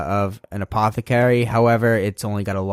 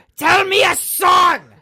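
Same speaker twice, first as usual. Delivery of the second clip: very high-pitched, very slow, drawn-out screaming yell; 4 dB louder than usual. Retelling how a man in a mask yells at a kid at the door: imitating someone screaming. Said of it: "he just starts screaming".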